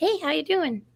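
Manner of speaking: very high-pitched voice. Imitating how a viewer who writes in chat might sound: imagined voice of God Tank. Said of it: "he probably sounds like".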